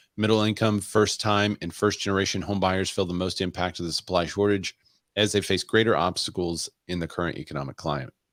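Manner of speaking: usual speaking voice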